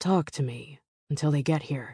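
plain

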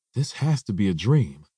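ordinary delivery

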